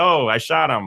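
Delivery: matter-of-fact, flat, no alarm. Describing how someone's tone of voice sounded, imitating a flat, unshocked tone. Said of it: "I don't think the tone of the voice was very shocking. I just think it's kind of like".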